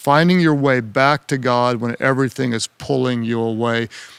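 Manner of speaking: normal talking voice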